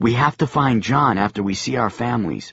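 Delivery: ordinary delivery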